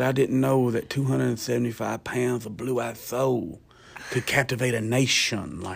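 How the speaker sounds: put-on wrestler voice with a lisp. Retelling an early memory of a wrestler's stadium interview: Dusty Rhodes impression with a lisp. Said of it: "he talks like this".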